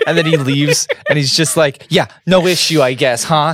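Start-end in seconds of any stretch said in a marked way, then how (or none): 1.9-3.5 very sarcastic, dripping, pointed sarcasm. Retelling a character's parting line as he leaves: imitating a very sarcastic tone. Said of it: "very sarcastic".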